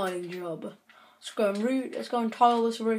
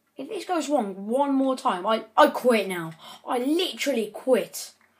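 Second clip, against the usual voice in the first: annoyed, fed-up complaining tone; 2 semitones higher, 3 dB louder than usual. Streaming after something keeps going wrong, speaking annoyed. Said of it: "but I'm getting annoyed as well".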